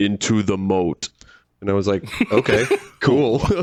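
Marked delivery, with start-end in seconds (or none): 0.0-1.1 utterly level, flat, dead monotone, no inflection. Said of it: "in like the most [name] like monotone voice".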